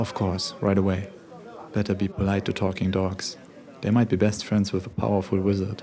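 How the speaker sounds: ordinary delivery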